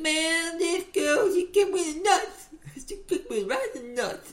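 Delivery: weird, very high Southern blues-man voice. Retelling a scene where a drunk man talks, in a weird southern blues-man voice. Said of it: "blues man in the South kind of voice".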